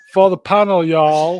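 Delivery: booming, very loud, high Texan accent. Urging another speaker to try it, giving an example in a Texan accent. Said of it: "Give me give me a best Texan".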